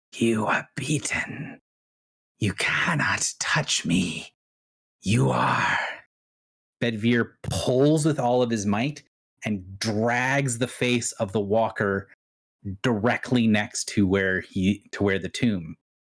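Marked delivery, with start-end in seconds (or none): 0.1-5.7 gurgling, bubbling, scornful, disdainful creature voice. Narrating a scene, the storyteller voices the tentacled creature with a bubbling, disdainful voice. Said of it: "you hear the bubbling voice, disdain in it".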